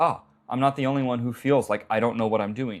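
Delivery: ordinary talk, nothing marked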